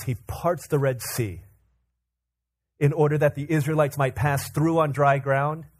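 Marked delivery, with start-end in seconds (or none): none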